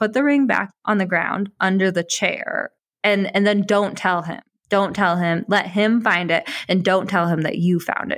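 ordinary talk

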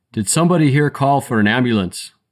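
loud shouted call with a faint Irish brogue. A paramedic calls through the door after pounding on it, yelling in faint irish brogue. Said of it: "yelled a voice in a faint Irish brogue".

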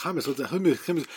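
fast, fake European accent. Describing a man talking with an Israeli and a Palestinian, faux European accent. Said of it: "faux European accent he's doing".

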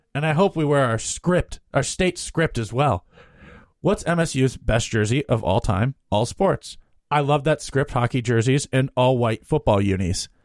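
plain

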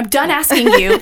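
loud, exaggerated, put-on scolding mother voice. Telling listeners to go give five stars: put-on mom voice. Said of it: "Bring out the mom voice".

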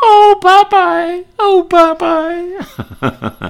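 very high, drawn-out, sing-song, lovesick voice. Quoting a cartoon girlfriend in love: lovestruck Olive Oyl voice. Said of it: "when she was in love with him, she would say".

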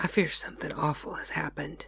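hushed, soft whisper under the breath. The housekeeper, as the pastor comes near, speaks to him in a hushed voice. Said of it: "she added in a hushed voice".

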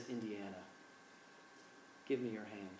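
put-on very hushed, soft, gentle, tender Scottish accent. Retelling a movie's climax, the speaker voices Sean Connery's plea: soft tender Sean Connery voice. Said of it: "goes from being really gruff to very soft and tender".

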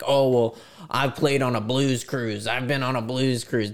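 mock screaming in a man's voice. Retelling what a guy screamed at the speaker, imitating the shouting. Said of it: "he's screaming at me like".

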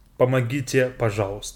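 ordinary delivery

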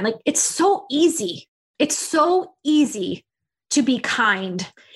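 slow, moved, heartfelt emotional voice. Talking about small acts of kindness, getting emotional. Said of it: "I'm getting emotional again".

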